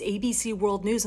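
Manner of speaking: ordinary talk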